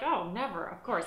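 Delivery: normal talking voice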